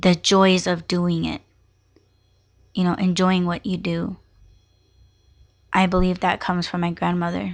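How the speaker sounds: speaking while fighting back tears. Talking about what a grandmother passed on, holding back tears. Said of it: "I'm trying really hard not to cry".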